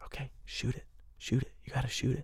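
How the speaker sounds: very quiet, hushed whisper. Recalling whispering permission into a paying hiker's ear, retelling a whisper. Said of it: "I'm whispering in their ear".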